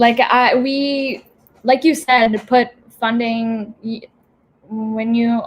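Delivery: stuttering, stammering, stop-start delivery. Speaker trying to finish a point in a discussion: stuttering. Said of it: "oh my god, I'm stuttering".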